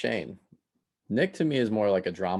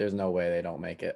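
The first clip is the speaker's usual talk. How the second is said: plain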